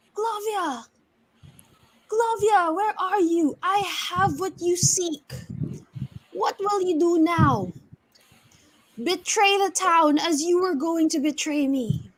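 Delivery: high, carrying werewolf voice, shouting. Voicing a werewolf calling out over a burning town: yelling werewolf. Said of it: "he yells out".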